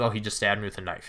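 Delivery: casual, quiet, unbothered tone.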